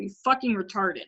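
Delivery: put-on frustrated tone. Speaker quoting a man who was very mean to them, imitating someone frustrated. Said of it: "when he'd get frustrated at me".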